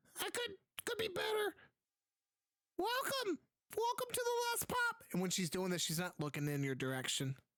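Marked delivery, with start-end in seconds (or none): 0.1-4.9 put-on very high elderly dwarf woman voice. Narrating a game scene, voicing the blind shopkeeper greeting customers: elderly dwarf shopkeeper voice. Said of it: "you see like a hunched over elderly dwarf woman, and when she looks at you, she has like like like her eyes are wide over. She's blind, / you see like a hunched over elderly dwarf woman, and when she".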